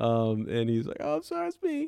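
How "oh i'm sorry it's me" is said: very high, terrified squeak. Retelling a book scene where a boy owns up to losing passwords: Neville Longbottom voice, terrified squeak. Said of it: "broken by the smallest and terrified squeaks".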